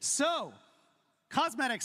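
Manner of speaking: shouting. Announcing the next topic after thanking everyone who submitted: shouting. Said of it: "sorry for shouting".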